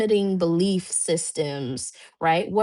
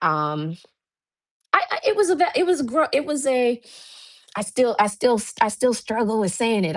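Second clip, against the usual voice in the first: halting stutter, tripping over words and restarting; 4 semitones higher than usual. Speaker addressing an audience, struggling to announce a business goal, stuttering. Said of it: "I'm stuttering".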